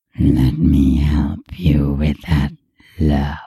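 inhumanly deep, gravelly, amused growl. A voice speaks to a hurt woman trying to sit up, amused gravelly deep growl. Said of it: "An amused, gravelly, and inhumanely deep voice growled".

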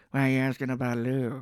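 talking through clenched teeth. Imitating Nicolas Cage in a movie: Nicolas Cage talking through teeth. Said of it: "this is how he's like".

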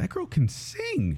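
slow, high-pitched awed tone. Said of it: "And I was like".

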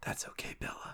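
whisper gradually swelling to full normal voice. Showing how a book's line should be read in your head: whisper rising to normal. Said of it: "It rose from a whisper to its normal pitch".

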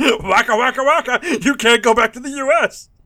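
high, belted out. Joking about the character from the U S consul: Fozzie Bear voice. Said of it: "that Fozzie Bear from the, from the U S consul".

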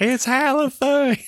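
put-on piercing, shrill, very high scream. Retelling a movie scene where a farmer sees a hose: imitating a farmer screaming. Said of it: "And he just screams it".

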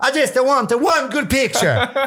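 put-on over-the-top Italian accent, very high pitched. Imitating a mom wanting one good picture of her son, exaggerated Italian accent. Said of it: "Like the brutal Italian accent".

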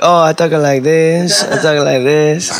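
imitated Spanish accent. Chatting with a friend about Spanish girls who speak English, doing a Spanish accent impression. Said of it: "they got that Spanish accent. Like".

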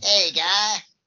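high, loud cartoonish delivery. Comparing a movie's Stalin to a cartoon: Saddam from South Park voice. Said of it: "he super reminds me of Saddam from South Park".

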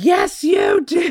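shrill, very high, very loud shrieking. Telling a story about a woman at a window, retelling a woman screaming. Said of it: "she's screaming through the window".

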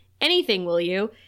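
normal talking voice

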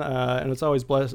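ordinary talk

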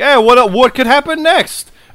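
frantic hyped delivery. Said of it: "but it was also like".

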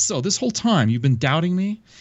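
exasperated, frustrated tone. Retelling a man confronting another who doubted him, retelling a frustrated outburst. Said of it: "He's all frustrated".

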